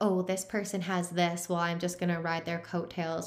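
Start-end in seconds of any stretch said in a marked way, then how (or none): none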